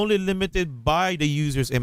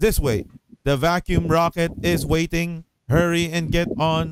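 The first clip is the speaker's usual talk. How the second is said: flat monotone mechanical robot voice. Reading comic panels aloud, voicing characters: robot voice. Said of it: "I'm giving them robot voices".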